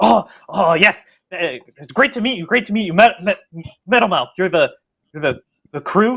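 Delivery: very eager, stumbling, tripping over words. In a roleplay, the narrator voices a character leaning across the table to the player: eager. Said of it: "very eagerly leans across the table to you and says".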